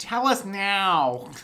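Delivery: over-the-top, with "now" drawn out. Recapping a scene, acting out Anakin's line: mock over-the-top Anakin demand. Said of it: "Tone it down".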